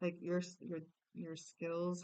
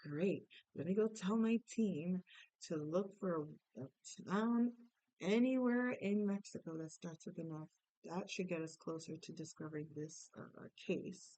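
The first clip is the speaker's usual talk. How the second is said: normal talking voice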